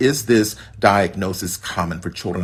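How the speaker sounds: ordinary delivery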